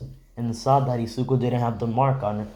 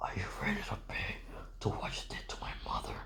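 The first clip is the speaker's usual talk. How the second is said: hushed, darkened, whispered dark tone; 8 semitones higher, 16 dB quieter than usual. Reading a story aloud, voicing a character's threat: dark tone voice. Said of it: "Changing his voice into a dark tone voice".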